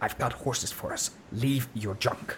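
hushed whisper, muttered under breath. Narrator voicing Westpike sprinting toward the stables, whispering under his breath. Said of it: "he's whispering under his breath".

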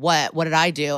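ordinary delivery

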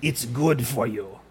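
low, growling barbarian voice. Recalling a barbarian on an old Swedish mealtime show eating mayonnaise, imitating a barbarian's growl. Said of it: "a spoonful of mayonnaise and growls".

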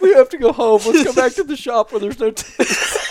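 shrill, very high, very loud mocking voice. Retelling a friend's panic about ticks: mocking imitation of Jacob. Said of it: "I appreciate the, the, the mocking".

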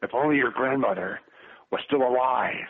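grumbling movie-star impression. Retelling what you said after giving the old stare, in a grumbled Clint Eastwood voice. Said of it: "in my best Clint Eastwood voice, I grumbled".

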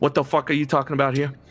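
confrontational, challenging tone. Narrating a scene, speaking as Champagne to the listener, Champagne character voice. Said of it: "pokes one big fucking sausage finger across the hall at you and says".

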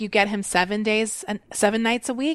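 plain

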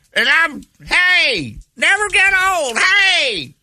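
put-on high, shouted, belted old-rocker scream.

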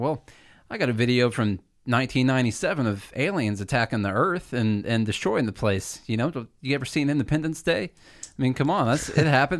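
ordinary talk

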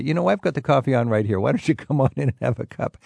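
ordinary delivery

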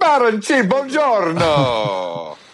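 put-on Italian accent. Greeting the guest's name playfully: Italian accent. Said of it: "enjoy that Italian accent".

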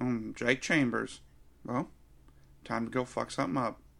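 half-asleep, dozy, nodding-off delivery. Imitating an actor's movie line, sounding half asleep. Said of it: "half asleep in the whole movie".

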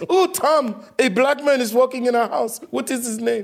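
very high, put-on woman's voice. Told to go ahead and do it, speak to Tom in a Gisele impersonation. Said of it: "do your Giselle impersonation".

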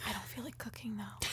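mock soft, voiceless ASMR-style whisper.

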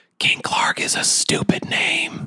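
slow, whispered, taunting delivery. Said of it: "I whisper in his ear".

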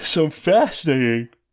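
words stretched through a yawn. A speaker who did not sleep well comments on game news, yawning. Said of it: "I am yawning".

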